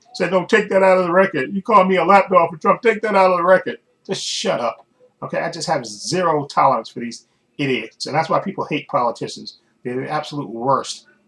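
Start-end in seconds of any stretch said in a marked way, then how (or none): 0.3-3.8 put-on high, loud crybaby whine like a bawling baby. Retelling a representative's protest about being called a lapdog: Clay Higgins whining like a crying kid. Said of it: "he started crying like a little kid".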